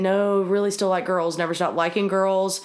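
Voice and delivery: ordinary talk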